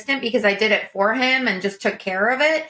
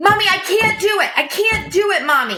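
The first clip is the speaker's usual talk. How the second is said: put-on very high-pitched, fed-up little kid voice; 10 semitones higher than usual. A mother retells her son coming back in from the Christmas lights, imitating a frustrated child. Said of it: "He is frustrated".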